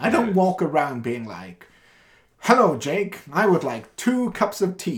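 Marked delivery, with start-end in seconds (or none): 2.4-5.0 put-on radio announcer delivery, pitched up. Explaining they developed a radio voice over the years: radio voice. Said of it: "that's not my normal cadence".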